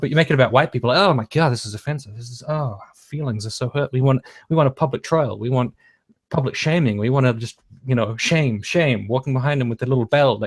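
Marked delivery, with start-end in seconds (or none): none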